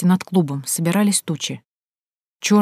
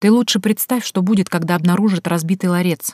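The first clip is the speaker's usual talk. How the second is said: ordinary delivery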